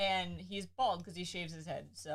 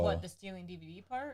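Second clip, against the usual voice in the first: plain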